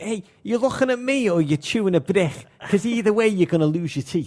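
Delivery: put-on loud, tough, full-on fronting Liverpool accent. Recalling his schoolyard double life, squaring up to other kids, fronting as a tough Scouse lad. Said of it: "Like full on fronting it".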